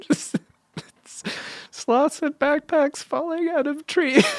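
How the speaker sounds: high voice, laughing through tears.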